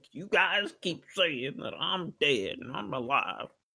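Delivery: upset, very high-pitched complaining tone. Retelling how Bill Cosby told people he was alive: upset Bill Cosby impression.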